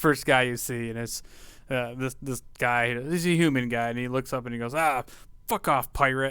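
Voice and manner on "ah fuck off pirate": dismissive, rude fisherman voice. Voicing a fisherman who brushes a pirate aside: dismissive fisherman brushing someone off. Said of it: "he kinda brushes you aside".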